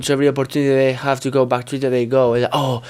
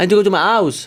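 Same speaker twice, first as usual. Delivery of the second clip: put-on British regional accent, pitched up; 6 semitones higher, 3 dB louder than usual. Asked to speak like Gemma, repeating a phrase while imitating Gemma's accent. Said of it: "Can you do my accent?".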